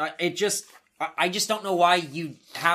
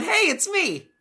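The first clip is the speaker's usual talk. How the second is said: very high, upbeat, bright voice; 3 dB louder than usual. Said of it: "comes out smiling and pointing and going".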